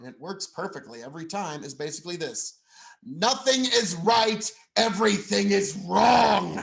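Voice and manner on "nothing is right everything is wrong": slow, drawn-out, rough and creaky politician voice. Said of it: "My impression of Charles Schumer".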